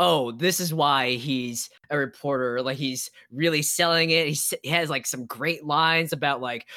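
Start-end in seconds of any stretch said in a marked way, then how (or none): none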